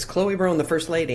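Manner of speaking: ordinary talk, nothing marked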